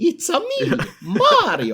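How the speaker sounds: loud, very high, swooping plumber voice. Asked about impressions, showing the one used with friends: Mario voice. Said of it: "Mario from uh, Super Mario Brothers".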